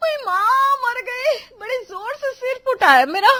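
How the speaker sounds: loud, shrill, very high scream of pain. Reading a story as a daughter-in-law hit by falling pots: screaming loudly in pain. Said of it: "इतनी तेज आवाज में चिल्लाते".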